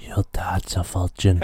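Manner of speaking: soft, whispery ASMR voice. Asked to say the line again with a bit of asmr: soft asmr whisper. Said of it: "Can you say it again with a bit of ASMR?".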